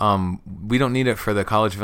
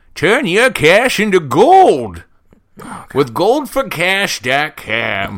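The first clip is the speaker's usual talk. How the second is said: put-on old prospector voice, higher, louder, slower; 9 semitones higher, 9 dB louder than usual. Pitching a better version of the gold ad read, in an old prospector voice. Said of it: "I'm an old prospector".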